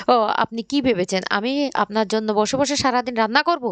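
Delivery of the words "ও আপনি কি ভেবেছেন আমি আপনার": ordinary delivery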